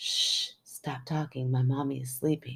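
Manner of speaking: hushing little whisper. Reading aloud a creepy story, a child's line: whispering child's line. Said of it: "Then he whispered".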